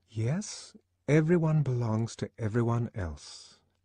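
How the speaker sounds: slow, unhurried, sighing. Reading the novel, the narrator voices a young woman echoing her friend's words, slow and sighing. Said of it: "Lenina repeated slowly, and, sighing".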